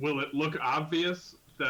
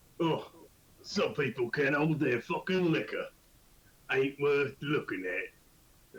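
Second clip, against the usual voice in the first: put-on, grumbling Cockney British accent. Playing a character in a tabletop game, grumbling in a Cockney British accent. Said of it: "because I'm like a Cockney British guy".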